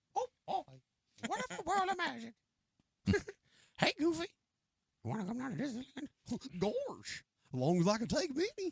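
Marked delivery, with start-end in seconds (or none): 0.2-6.6 squeaky voice with swooping pitch. Speaker shows off the voices they can do with a Mickey Mouse impression. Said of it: "I could do a pretty good Elmo and a pretty good um, Mickey Mouse".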